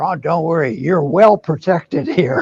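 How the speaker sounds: whispering. Retelling what someone at a crowded house party said: imitating a whisper. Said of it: "somebody whispered to me".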